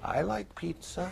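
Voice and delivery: mock tiny whimper, very soft and very high. Recalling smelling pizza on Saturdays in the emergency room, retelling own whimpering. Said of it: "I'd sit there whimpering".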